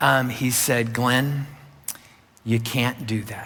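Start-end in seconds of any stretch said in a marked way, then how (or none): 0.9-3.5 perfectly even, very calm, composed tone. Recalling what he said to Glenn, imitating a very calm voice. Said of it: "in a very calm voice".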